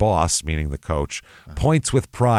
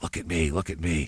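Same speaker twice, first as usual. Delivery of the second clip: imitated whisper, quieter than the surrounding speech; 2 semitones lower, 8 dB quieter than usual. Retelling how a man in the shadows called to people: imitating a whisper. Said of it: "and he'd whisper".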